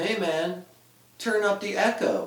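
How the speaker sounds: taunting, mocking sarcasm, very high-pitched. Retelling what Ray kept saying to you at a heavy metal show; mocking sarcastic tone. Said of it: "in kind of a mocking, you know, sarcastic sort of tone".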